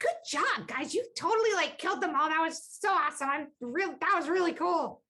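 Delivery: very high-pitched goblin yelling, cheering. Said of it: "faint goblin, um, yelling".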